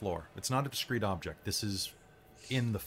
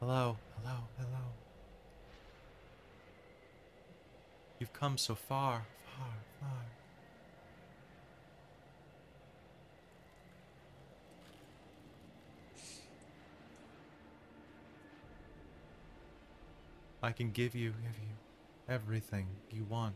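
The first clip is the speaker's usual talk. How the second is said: ethereal, otherworldly feminine spirit voice; 11 dB quieter than usual. Game master voices a speaking blue flame shaped like a woman: ethereal feminine voice. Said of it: "speaking with this very ethereal voice".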